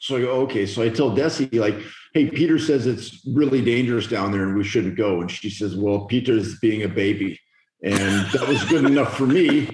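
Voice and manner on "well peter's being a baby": put-on speaking with a Bulgarian accent. Speaker quotes Desi's reply on the trip: imitating Desi's Bulgarian accent. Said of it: "flawless Bulgarian accent".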